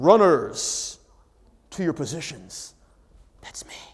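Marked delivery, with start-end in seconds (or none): 0.0-2.7 very low, very slow, big PA announcer voice. Retelling the start of a race, the announcer on the monitor, in a big announcer voice. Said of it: "the big voice comes up on a monitor".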